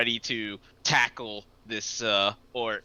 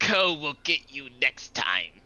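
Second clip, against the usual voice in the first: put-on fantasy orc character voice; 3 semitones higher than usual. Voicing an orc who dusts off a beaten fighter: orc voice. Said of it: "the orc stands up and ... says".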